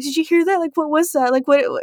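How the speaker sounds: high, panicked, terrified tone. Retelling when Carlos came in, the speaker acts out her past self: retelling being terrified. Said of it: "Like literally I'm terrified".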